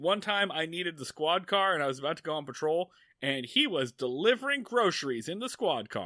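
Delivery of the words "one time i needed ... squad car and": plain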